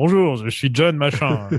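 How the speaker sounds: French dubbed-film voice in dubbing-actor style. Contrasting an actor's French dub voice with his real voice: imitating Schwarzenegger's French dub voice. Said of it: "qui parle comme ça".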